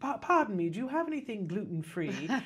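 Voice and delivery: put-on British accent. Retelling Jem walking up to a booth, in Jem's British accent. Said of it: "in a British accent".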